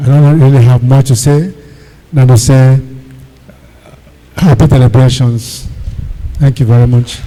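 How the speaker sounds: soft-spoken, quiet voice, hard to hear. A respected man, addressed as sir, gives brief celebration remarks; soft-spoken, not loud. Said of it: "big man voice, not the loud. Did you notice when Oga was talking, some of us were trying to hear".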